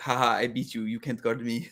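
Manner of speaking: put-on smug, gloating tone. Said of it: "Luka will just smirk at you".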